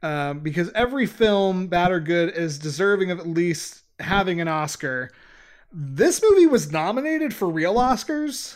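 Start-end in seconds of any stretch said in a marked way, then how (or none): 5.7-8.5 high, shocked, incredulous, question-like rising tone. Telling another speaker about the film's oscar nominations: shocked, questioning tone. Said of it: "a question mark and, and a shock in my voice".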